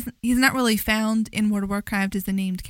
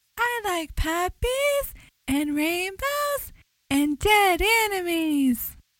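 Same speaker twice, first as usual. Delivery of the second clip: creepy, innocent-sounding, high-pitched voice; 9 semitones higher than usual. Acting out what a big character says while seeming innocent, imitating a creepy high-pitched voice. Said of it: "he uses his creepy high-pitched voice".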